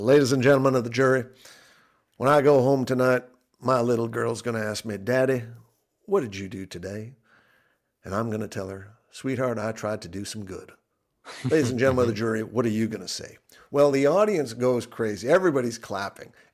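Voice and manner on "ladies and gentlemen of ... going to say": put-on Texas drawl, louder. Quoting a lawyer's closing words to the jury, imitating a Texas drawl. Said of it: "talked with a real Texas drawl".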